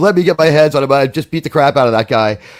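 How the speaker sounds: plain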